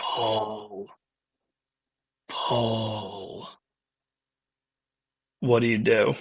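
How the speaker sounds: deliberate, very slow, soft murmuring call. Narrator voicing a lady dragon leaning in toward the player, speaking very slowly. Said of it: "you just hear her very slowly just say".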